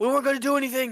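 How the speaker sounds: panicked shouting. Voicing a cornered character pleading innocence to the players: NPC yelling in panic. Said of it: "yelling now".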